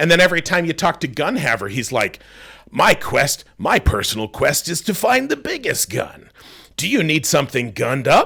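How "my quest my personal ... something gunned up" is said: cartoony sidekick-style character voice. Mocking typical cartoony game dialogue: imitating a cartoony game character. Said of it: "the characters are pretty cartoony".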